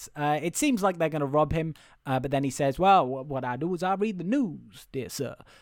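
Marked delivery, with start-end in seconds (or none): 2.8-5.3 put-on southern American accent. Retelling a story character's line, doing a Tom Hanks impression. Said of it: "That was not the worst Tom Hanks impression I've ever done".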